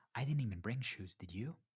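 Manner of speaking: hushed half-whisper under the breath. Retelling a quiet aside to a partner at a group dinner: retelling a half-whisper. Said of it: "I whispered".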